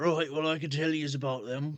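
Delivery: put-on old man character voice. Voicing an older gentleman in a corner who answers a question: older gentleman character voice. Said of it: "an older gentleman ... looks up at you and just goes".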